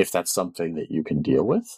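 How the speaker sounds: plain reading voice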